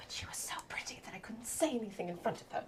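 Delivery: near whisper. Retelling what someone said about a pretty girl, in a slightly lowered voice. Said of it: "I am gonna lower my voice a little bit".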